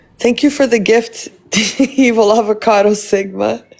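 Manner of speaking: words broken up by laughter. Thanking someone for a gift, laughing while talking. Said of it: "I don't know why I'm laughing".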